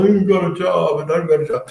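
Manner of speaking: put-on, high, whiny tone. Retelling his phone call to his counselor after losing his job: imitating himself whining. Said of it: "called my counselor whining".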